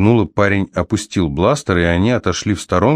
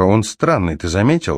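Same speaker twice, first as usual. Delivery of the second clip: plain reading voice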